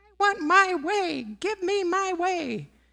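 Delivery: put-on childish fit, very high-pitched and drawn-out. Asking whether we throw a tantrum when told not yet: acting out a little tantrum. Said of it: "do we throw our little tantrum".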